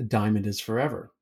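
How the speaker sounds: usual speaking voice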